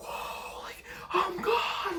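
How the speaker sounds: high, breathless, awed whisper. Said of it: "I was like".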